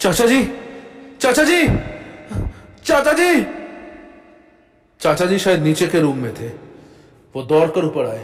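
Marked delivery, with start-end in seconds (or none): 0.0-3.5 very high shout, rising in pitch. Retelling how they called for their uncle, acting out a shout. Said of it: "चिल्ला क्यों रहा है?".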